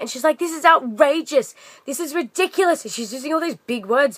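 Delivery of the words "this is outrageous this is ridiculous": outraged, high-pitched yell. Retelling a woman's reaction to her surprise, retelling a yell. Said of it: "She's like yelling at me".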